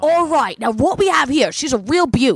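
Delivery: keen, high Australian accent. Trading Australian accents with someone, show that you can do a Crocodile Hunter impression. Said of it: "I can do the crocodile hunter".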